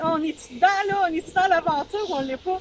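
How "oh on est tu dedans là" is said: fast mock shouting. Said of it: "on va dire".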